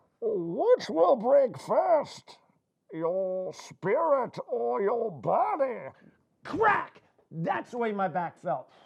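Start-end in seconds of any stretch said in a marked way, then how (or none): 0.2-5.8 slow, deliberate, drawn-out, menacing villain voice. Prompted by a co-speaker to repeat the quoted line in Bane voice. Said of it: "let's hear that in Bane voice".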